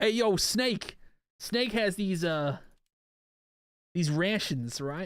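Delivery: heavy, slow, thick, put-on Boston accent. Trying out a line in a thick Boston accent. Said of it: "I could do it with like a thick Boston accent".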